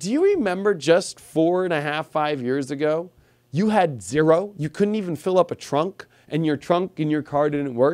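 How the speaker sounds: normal talking voice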